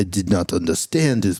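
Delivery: put-on French accent. Quoting what people said after a phone call, in a put-on French accent. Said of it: "in the French accent".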